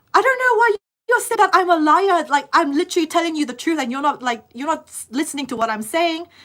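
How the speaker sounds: mock heated, high, angry screaming. Retelling an argument with officers who called her a liar: imitating her own screaming. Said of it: "I was screaming as well".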